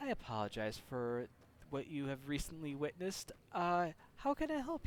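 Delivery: hushed, calm, very soft, gentle service voice. Retelling what he said to a couple after the incident: retelling in a very soft tone. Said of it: "in kind of a very soft tone".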